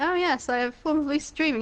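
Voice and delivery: ordinary talk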